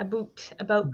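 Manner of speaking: "about" pronounced in a Canadian accent. Showing how certain words come out in their videos, in a Canadian accent. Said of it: "they sound so Canadian".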